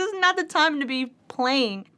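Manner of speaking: said through tears, high. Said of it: "in tears".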